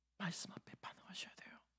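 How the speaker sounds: soft, hushed, dramatic whisper.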